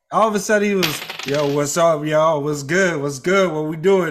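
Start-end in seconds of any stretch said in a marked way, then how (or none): 1.2-4.1 casual, slangy voice dropped deep. Retelling how someone started talking after getting together: imitating someone's deep voice. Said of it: "his voice got deep".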